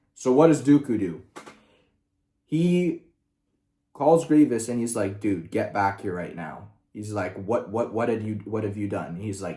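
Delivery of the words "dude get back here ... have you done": put-on angry voice, lower. Retelling a story where one character calls another, furious: imitating an angry Dooku. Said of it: "Dooku's fucking pissed".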